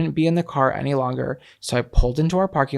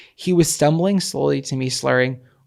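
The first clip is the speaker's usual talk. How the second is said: normal talking voice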